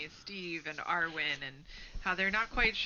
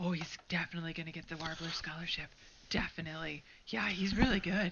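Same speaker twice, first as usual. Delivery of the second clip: hushed whisper, slower; 2 semitones lower than usual. Audience members at a front table reacting to a performer, whispering. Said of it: "you hear him whispering".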